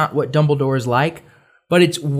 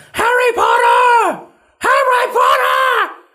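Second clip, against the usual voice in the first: put-on shout, much higher and slower; 4 dB louder than usual. Describing a movie scene where a man calls for Harry Potter, retelling a shout. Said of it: "Shouting my name".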